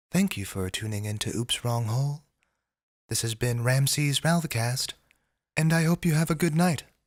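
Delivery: silky smooth, lulling, soothing jazz-radio voice. Host signs off the show oops wrong hole in a silky smooth voice. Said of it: "this silky smooth voice".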